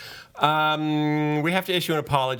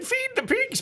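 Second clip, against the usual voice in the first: put-on voice pushed very high. Quoting the owner's order from when he was a slave, very high voice. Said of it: "he talked like this because he was in Ireland. And he had a very high voice".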